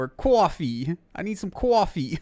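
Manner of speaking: put-on bad Boston accent. Speaker admits the only boston accent they can do: bad boston accent. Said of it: "The only fucking Boston I can do is".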